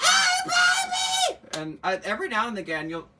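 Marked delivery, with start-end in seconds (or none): 0.0-1.4 very loud, shrill, very high scream. Retelling calling out to horses from a window: imitating screaming out a window. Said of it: "I like to scream out the window at 'em".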